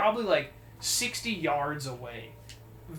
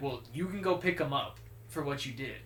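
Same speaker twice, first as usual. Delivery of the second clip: ordinary talk, nothing marked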